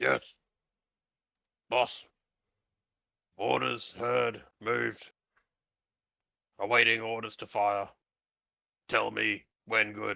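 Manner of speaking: mutant character voice. Retelling what he said to the boss, in his best mutant voice. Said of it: "I say in my best mutant".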